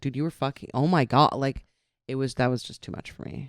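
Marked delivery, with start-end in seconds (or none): 0.0-1.3 frantic, panicked, very loud blurted outburst. Retelling how the woman reacted on realizing it: imitating her panicked voice. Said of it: "the panic in her voice".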